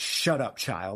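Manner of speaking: very harsh, hard, bitten-off scolding tone. Retelling a scene where Snape silences Hermione: harsh Snape voice. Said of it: "Just very harsh, all caps".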